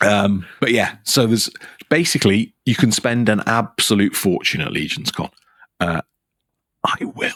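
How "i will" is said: soft, hushed whisper under the breath. Talking with another speaker about spending at a convention, whispering. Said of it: "I'm whispering that because everyone's".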